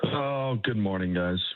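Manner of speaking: downcast tone. A radio guest greets the morning show hosts in a sad voice. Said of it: "You sound sad".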